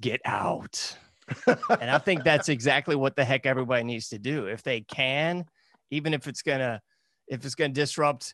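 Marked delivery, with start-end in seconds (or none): 0.0-1.0 put-on sinister, evil horror movie voice. Retelling a horror movie scene where the priest goes in: Amityville Horror evil voice. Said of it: "the evil voice says".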